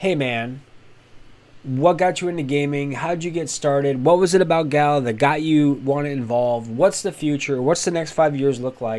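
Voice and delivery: ordinary talk, nothing marked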